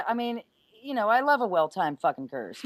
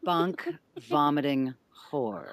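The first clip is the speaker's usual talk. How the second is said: very slow, drawn-out delivery, lower pitch; 8 semitones lower than usual. Repeating a crude game line when asked to say it slowly: said really slowly. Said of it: "say that real slow for me".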